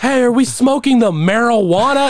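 very high, blaring, really loud holler. Retelling a coworker coming outside where everyone was smoking: imitating Devin speaking really loud. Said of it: "really loud, really fucking loud".

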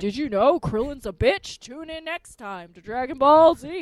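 big announcer voice, like end credits. Retelling how an episode ends: Dragon Ball Z announcer voice. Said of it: "And the announcer's like".

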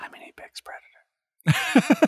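hushed, very slow, drawn-out whisper. Retelling a movie moment where a character whispers: imitating a whisper. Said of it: "this moment where he whispers".

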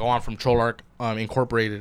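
ordinary talk

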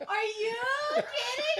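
shrieking disbelief, very high, loud, shrill, drawn-out scream. Reacting as someone strips off his shirt: screaming. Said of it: "Stop screaming".

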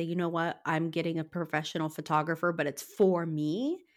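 ordinary talk, nothing marked

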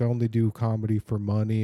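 normal talking voice

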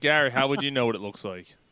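normal talking voice

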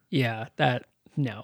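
bone-dry, unbothered, low, flat deadpan. Retelling how a party character answered everyone: imitating Brian's deadpan delivery. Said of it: "he was just so deadpan".

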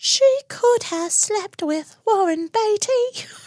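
very high-pitched, innocent-sounding voice. Quoting little Daphne to a fellow fan, do a high, innocent Daphne voice. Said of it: "That's a really good impression".

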